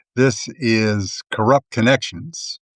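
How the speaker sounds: normal talking voice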